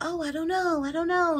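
high, dithering, unsure, indecisive voice.

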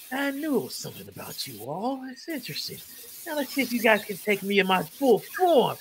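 swooping, ratlike monster voice. Game master voices an enemy who then turns into a rat person: rat voice. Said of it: "he sounded like he was a rat".

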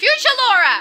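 very high-pitched, loud yelling. Calling out to someone who turns out to be right there, yelling. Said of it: "You don't have to yell".

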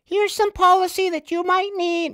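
very high, irritating, annoying woman's voice. Retelling how the women emailed policy: imitating an annoying lady's voice. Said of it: "This is all ladies' fucking voices sound to me".

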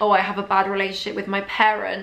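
ordinary talk

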